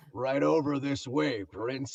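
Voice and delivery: big, deep, slow, unhurried burly voice. Retelling a line recorded in a movie session: Alfred Molina impression. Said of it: "in his big, deep, burly voice".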